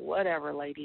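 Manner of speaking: plain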